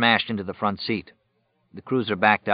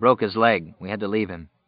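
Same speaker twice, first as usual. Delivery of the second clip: plain reading voice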